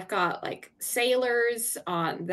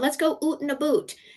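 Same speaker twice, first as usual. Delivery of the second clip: put-on Scottish accent, pitched up, oo in out and boat; 7 semitones higher than usual. The speaker quotes an older Scottish friend's saying, imitating Kathy's Scottish accent. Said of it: "she loved using little Scottish terms".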